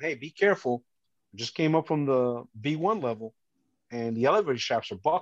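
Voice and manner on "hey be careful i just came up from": usual speaking voice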